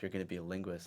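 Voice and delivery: acted whispered line. Retelling what the intel lady at boot camp said: imitating a whisper. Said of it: "And, like, whispered".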